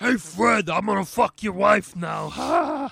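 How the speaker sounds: warped, put-on puppet-style voice. Mocking how new Flintstones voices will sound, twisted Muppet-like voice. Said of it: "That sounded like a Muppet".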